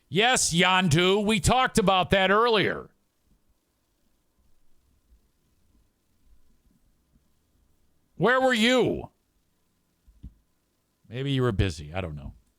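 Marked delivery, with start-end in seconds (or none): 0.1-9.1 shouty, exasperated outburst with high, swooping yell. Answering a question about the brackets that was covered earlier: yelling. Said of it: "I don't know why I'm yelling at you".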